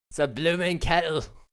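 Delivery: loud, high Scottish accent. Trying out a British phrase while chatting, landing in an accidental Scottish-sounding accent. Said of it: "Why'd I say it like a Scotsman?".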